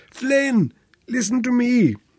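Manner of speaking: very high, hoarse, croaking voice. From a raft, he calls to the unmoving older man, croaking. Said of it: "he croaked".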